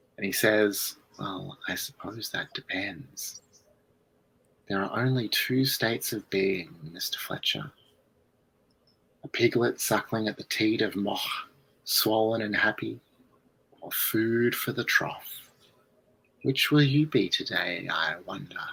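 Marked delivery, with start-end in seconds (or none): 1.2-18.6 very soft, hushed, low-volume voice. Narrator voicing a figure who answers the player from the stairs: very quiet voice. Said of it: "answers you in a very quiet voice".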